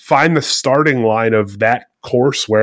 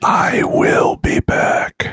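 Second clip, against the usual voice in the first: slow, whispered ominous voice. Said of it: "That's ominous".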